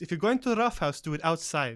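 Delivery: severe, no-nonsense, stern tone. Voicing a character scolding others at a table: stern. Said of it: "with a stern look on her face".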